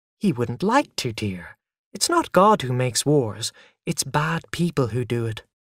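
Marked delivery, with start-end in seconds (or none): none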